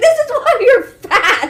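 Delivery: mock scream, shrill, high as it goes. Retelling how another person screamed at the dog: imitating a scream. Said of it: "screams out the top of her lungs".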